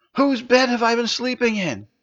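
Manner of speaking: very high, panic-stricken voice. A character rushes over to two men back from the latrines: panicked. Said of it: "he asked in a panic".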